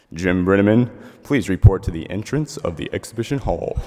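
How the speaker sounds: put-on deepest voice that can be mustered. Speaker retells what they said at an exhibition hall, in the best deep voice they could muster. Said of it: "in the best deep voice I could muster".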